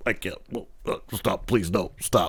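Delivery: breathy, whispered, tearful, fake pleading crying. Mocking Vince McMahon crying about the Undertaker: imitating Vince McMahon crying. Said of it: "him crying at the Undertaker thing".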